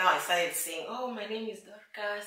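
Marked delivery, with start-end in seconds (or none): 0.9-2.3 quiet, soft-spoken, hushed voice. Recalling introducing herself in a foreign land, imitating her soft-spoken past self. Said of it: "I was very soft spoken".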